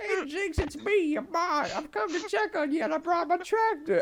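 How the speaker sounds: acted-out very high, shrill yell, loudest possible. Retelling how a player drove a tractor at someone in a game: retelling a loud shout. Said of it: "as loud as he can into his fucking mic".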